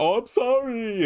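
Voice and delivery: very high, insincere, fake sorry tone. Retelling how a wrestler apologized without meaning it: imitating Okada's insincere apology. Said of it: "and he's not actually sorry".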